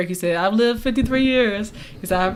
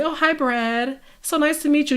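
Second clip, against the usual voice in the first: nicest, most proper put-on voice, pitched up; 6 semitones higher than usual. Acting out a polite greeting to someone, in a put-on overly proper voice. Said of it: "the most proper voice you can put on".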